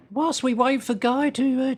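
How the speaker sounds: bad put-on Australian dame voice. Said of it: "I'm doing a terrible, uh, Barry Humphries impersonation".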